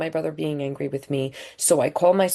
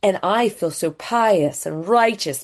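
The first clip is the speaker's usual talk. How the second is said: ordinary talk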